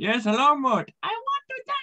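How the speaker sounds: high, sing-songy, regal voice. Taking a request for voice impressions, doing a King Julien voice. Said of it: "let's go with King Julian".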